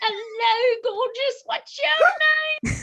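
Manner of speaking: fake British accent, pitched very high. Speaker shows how she talks to every dog she sees, put-on british accent. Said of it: "I turn British for everything".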